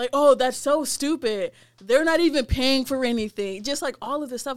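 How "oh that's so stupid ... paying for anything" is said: loud attitude-filled yelling. Retelling what someone yelled over the store radio: imitating someone yelling. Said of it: "she's just all just yelling".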